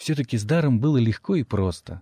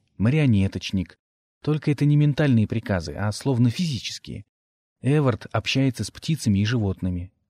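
ordinary delivery, nothing marked

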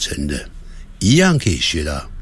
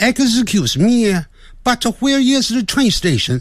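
English with a Shandong accent. Speaker retries the line while adjusting the voice: Shandong-accented English. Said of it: "这有点像山东的".

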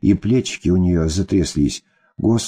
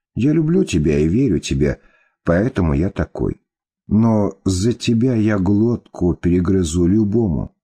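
plain

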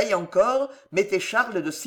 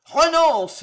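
booming, thundering, loud and raised kingly voice; 8 semitones higher, 5 dB louder than usual. Reading a story, the king aims his gun at Condé and thunders. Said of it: "tonna le roi en couchant Condé en joue".

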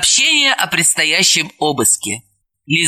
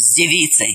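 plain reading voice

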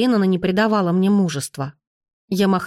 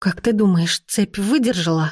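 quivering, trembling, shaky voice. In pitch darkness after the lights go out, the narrator asks her companion: trembling voice. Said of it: "Дрожащим голосом спросила я".

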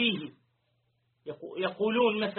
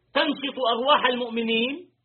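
normal talking voice

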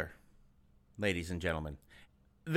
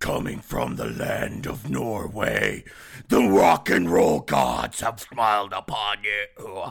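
low, slow Norwegian death metal voice. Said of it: "You're doing that completely wrong".

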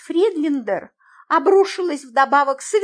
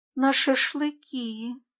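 quiet, then much quieter; 7 dB quieter than usual. Katya answers Miss Friedlander's question quietly. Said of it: "тихо сказала Катя".

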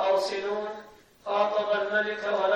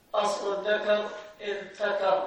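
plain

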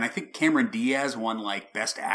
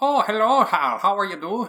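loud, very high, fake Irish accent; 10 semitones higher, 7 dB louder than usual. Speaker imitates an actor's line from a movie, fake Irish accent. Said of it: "Never seen him put on a fake accent before".

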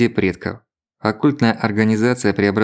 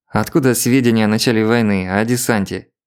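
ordinary delivery

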